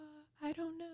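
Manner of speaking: small, tiny voice. Acting out how an employee answered a caller's question, in a tiny little voice. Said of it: "she answers it in this tiny little voice".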